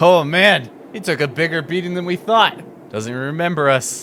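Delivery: loud, high adventurer NPC voice.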